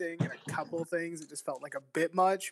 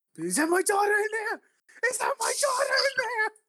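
put-on distraught voice, higher and louder; 4 dB louder than usual. Acting out a father whose daughter has died: Sean Penn impression. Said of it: "you sound like Sean Penn".

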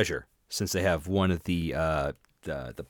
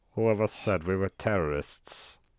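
put-on villain German accent, quieter; 4 dB quieter than usual. Answering a request to do Hans Gruber: Hans Gruber impression. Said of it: "Do Hans Gruber".

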